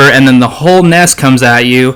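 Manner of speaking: ordinary delivery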